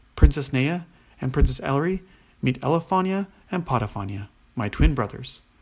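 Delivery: ordinary delivery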